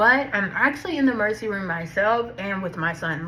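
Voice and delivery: normal talking voice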